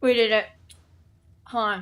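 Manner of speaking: talking with mouth full, mid-chew. Speaker announces a success while still eating: talking with mouth full. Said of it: "Sorry, I was eating".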